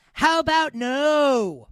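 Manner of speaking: villain voice with a long drawn-out "no". Asked whether the Steelers can win the Super Bowl, answering in a Doctor Evil voice. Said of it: "in my best Doctor Evil voice".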